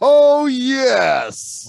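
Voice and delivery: high, loud, hyped-up shout.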